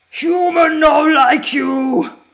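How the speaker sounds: loud, slow, drawn-out brutish monster voice. Speaker who played lots of Fallout 76 imitates its enemies: Fallout monster voice. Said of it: "That's that's how they sound".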